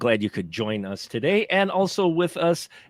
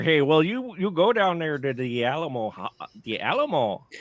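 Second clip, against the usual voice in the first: Upper Peninsula Michigan accent. Replying to the other speaker, who is also putting on a voice, in a Yooper accent. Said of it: "sound like a Youper".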